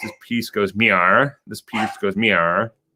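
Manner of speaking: put-on cartoon character voice. Joking about watching too much South Park, say the line in Cartman voice. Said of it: "like in the Cartman voice".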